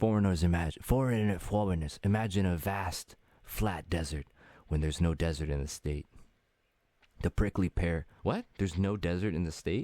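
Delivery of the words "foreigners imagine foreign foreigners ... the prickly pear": ghostly, spooky, eerie storyteller delivery. Reading out the next user's message, in a spooky voice. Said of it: "I gotta use a spooky voice".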